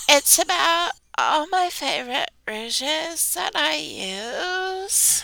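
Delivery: high voice, words dragged through vocal fry. Imitating Rachel hosting a podcast: imitating Rachel with vocal fry. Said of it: "And that vocal fry?".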